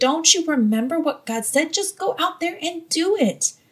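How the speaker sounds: impatient, half-exasperated tone. Showing the wrong way to speak to someone fighting fear, almost exasperated. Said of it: "with an almost exasperated tone saying".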